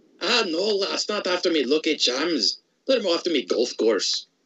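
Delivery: put-on Scottish accent character voice. Playing a game with a co-player, the speaker jokes in a Scottish accent. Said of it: "slip into my accents that I have".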